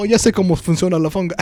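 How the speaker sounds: quick, high-pitched Spanish.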